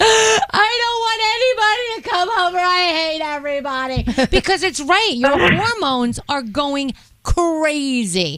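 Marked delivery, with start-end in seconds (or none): 0.0-4.3 words choked out through high, hysterical sobbing. Retelling own reaction when husband announced visitors: imitating hysterical crying. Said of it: "I was hysterically crying".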